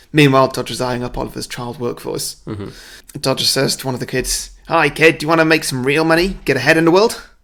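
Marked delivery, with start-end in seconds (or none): 4.7-7.2 put-on slipping into Australian accent. Retelling a film scene, voicing Dodger approaching a kid, Dodger with accidental Australian accent. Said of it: "He's suddenly gone Australian".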